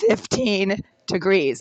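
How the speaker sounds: voice breaking up, cracking. Reporting no heat in the unit on a cold day: voice breaking up. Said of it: "and my voice is breaking up".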